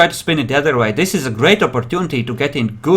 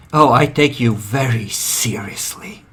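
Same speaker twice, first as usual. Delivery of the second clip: slow, murderous tone behind every word; 3 semitones lower, 3 dB quieter than usual. Voicing a character answering threats on a phone call: murder in his voice. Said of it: "There is murder in his voice as he says that".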